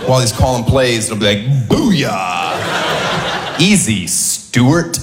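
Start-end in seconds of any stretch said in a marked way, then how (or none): 1.7-5.0 low, slow, drawn-out mock hip-hop sportscaster voice. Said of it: "feels the need to talk hip-hop".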